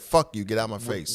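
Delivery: ordinary talk, nothing marked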